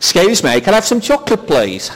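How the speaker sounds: put-on posh English accent. Retelling buying chocolate for his wife at a shop, in his best English accent. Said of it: "in my best English accent".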